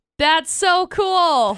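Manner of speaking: sarcastic delivery. Answering a story about a sad meerkat show episode: sarcastic. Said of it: "Stop being sarcastic".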